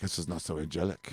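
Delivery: put-on English spoken with an Israeli accent. Retelling what people in Israel said about the riots: imitating an Israeli accent. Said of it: "In their accent".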